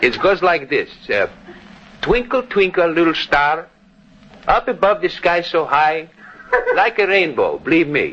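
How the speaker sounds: put-on Greek-accented speech. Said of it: "that Greek dialect of yours".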